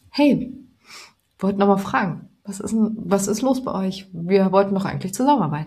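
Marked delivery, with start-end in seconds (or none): 0.1-4.0 nice, genuinely concerned, unreproachful tone. Advising how to phone people and follow up, friendly, caring tone. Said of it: "einfach nett und wirklich auf, ich mache mir Gedanken um euch, eher in diesem Ton".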